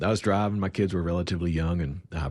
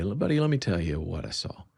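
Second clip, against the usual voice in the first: plain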